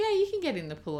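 high, fast, bright, cheerful reassuring tone.

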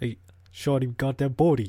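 bada bing bada boom accent. Answering another speaker's request for a line: bada bing bada boom accent. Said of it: "give me the bada bing, bada boom accent".

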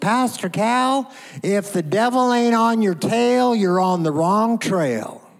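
put-on tiny, squeaky voice with an Oklahoma accent. Act out a woman coming up to her pastor after the Sunday night service, in a little squeaky Oklahoma voice. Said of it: "little squeaky voice from oklahoma she goes".

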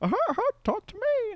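very high, silly little hamster character voice. Pretending to voice a pet hamster: put-on hamster voice. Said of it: "I was gonna be like".

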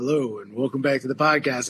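deep, dark, low intro-style voice. Imitating a podcast host going into his intro: deep dark Conan O'Brien voice. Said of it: "he goes into this deep, dark".

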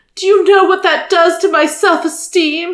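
whiny, complaining tone, high and loud whine. Narrator reading a sobbing prince's complaint to Olivia, in a whiny tone. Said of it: "His voice took on a whiny tone".

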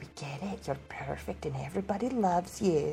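muttered under her breath, quiet aside. A player's character smiles at another woman, then speaks: muttered under her breath. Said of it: "under her breath goes".

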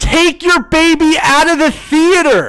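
very high, very loud, shrieked-out yell. Retelling yelling from their row at people with a baby in the theater, retelling a yell at them. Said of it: "I yell at them from our row".

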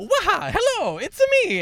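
manic, shrill, high holler, slow and swooping. Retelling meeting Charles Martinet, who looked insane: imitating Charles Martinet. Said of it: "he's just like".

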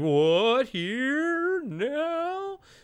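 put-on jittery voice, very high, stretched out. Retelling a movie scene where Joe hears news: imitating nervous Joe. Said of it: "Joe's kind of, like, nervous".

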